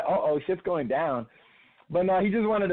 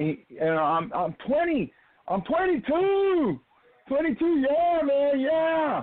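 put-on kid yell, much higher pitch; 10 semitones higher than usual. Recounting a kid in the crowd at the last show, retelling a kid yelling. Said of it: "this one kid started yelling".

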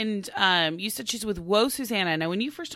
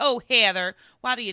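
put-on thick Okie accent, pitched higher; 4 semitones higher, 6 dB louder than usual. Doing an impersonation of a woman who bothers her; thick Okie accent. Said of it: "really thick, like oaky accent".

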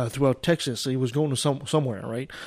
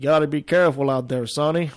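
put-on Texas accent, laid on deliberately; 4 dB louder than usual. Retelling what the guy who picked him up says, put-on Texas accent. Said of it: "I guess I should use my Texas accent".

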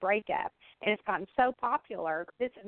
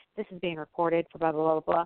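fast, blurred, rattled-off rapid-fire patter; 3 semitones lower, 3 dB louder than usual. Retelling how she reads the recording notice to people she calls, rushed fast disclaimer. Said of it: "like real fast".

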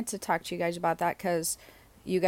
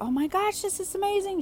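very high, overjoyed, excited screaming; 14 semitones higher than usual. Retelling a woman's reaction while walking to her mailbox, imitating her excited screaming. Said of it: "She's screaming and everything".

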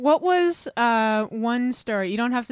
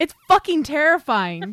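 said with vigor and full force, forceful and energetic; 4 semitones higher, 4 dB louder than usual. Asked to say it with vigor for the audience: said with vigor. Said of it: "say it with vigor".

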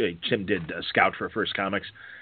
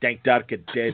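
put-on Scottish accent; 2 semitones higher than usual. Telling a story about a comics show, the speaker does a Scottish accent. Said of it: "do my Scottish accent".

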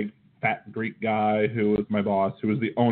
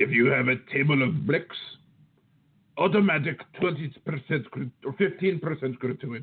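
strong, put-on Greek accent; 4 semitones higher than usual. A speaker recalls a man instructing them about customers, in a very Greek voice. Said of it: "in his very Greek voice".

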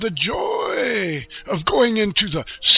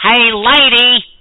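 put-on comic shout, getting louder; 10 dB louder than usual. Showing off impressions after claiming to do them: Jerry Lewis impression. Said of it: "I can do Jerry Lewis".

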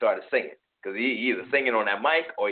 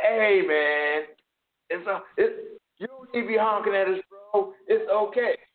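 put-on very high, slow, drawn-out drunk voice; 10 semitones higher than usual. Retelling what drunk strangers said to a honking driver: imitating a drunk man.

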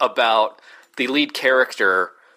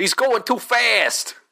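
put-on Jersey accent, much higher; 9 semitones higher than usual. Recalling a line you and a friend repeated to each other: The Miz Jersey impression. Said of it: "I did it more Jersey just now than The Miz did".

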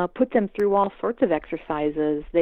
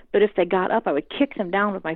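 ordinary talk

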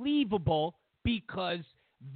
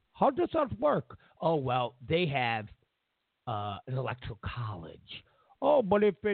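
put-on Indian accent, voice pitched very low; 6 semitones lower than usual. The speaker imagines a foreigner in another country asking a question, indian voice. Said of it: "I know that's my Indian voice".

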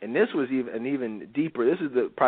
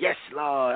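put-on mocking voice. Retelling how a woman in church disrupted the sermon: imitating a mocking voice. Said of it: "making a mockery of it".

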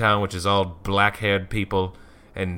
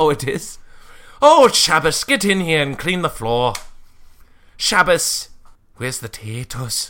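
loud, sing-song put-on Irish woman's accent; 7 semitones higher, 4 dB louder than usual. Doing a bit after others say it sounds Irish, Irish woman accent. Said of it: "that sounds like an Irish woman".

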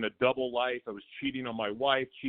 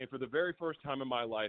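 ordinary delivery

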